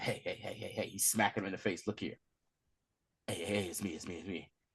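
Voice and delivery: low, soft, hushed, urgent voice.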